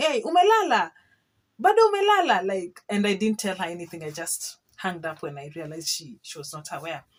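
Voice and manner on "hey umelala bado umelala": very loud, very high, frantic yelling. Retelling a phone call to a sister: imitating own past shouting. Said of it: "Let me just say I was shouting".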